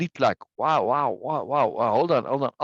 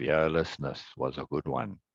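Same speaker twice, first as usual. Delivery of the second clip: flat alien voice, lower and quieter; 10 semitones lower, 7 dB quieter than usual. Narrator reads the alien Hamum's line, dead flat deadpan. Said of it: "Hamum deadpan".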